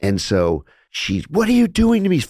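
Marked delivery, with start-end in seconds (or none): 1.3-2.2 very high, loud, freaked-out, panicked cry. Retelling a patient's psychotic episode: imitating a panicked patient. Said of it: "Freaking out".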